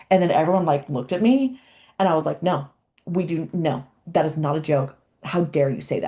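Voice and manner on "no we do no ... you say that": livid, furious voice. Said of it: "I was so livid. I was so mad".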